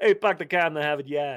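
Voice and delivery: put-on Boston accent. Joking about not doing the accent, then doing it anyway: boston accent. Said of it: "I can't do a Bostonian accent".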